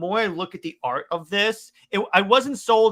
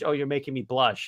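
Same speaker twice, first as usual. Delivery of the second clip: mock whispered voice, lower; 4 semitones lower, 4 dB quieter than usual. Quoting what she says when really close: imitating a whisper. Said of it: "a whisper in her voice when she goes".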